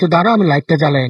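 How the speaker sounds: usual speaking voice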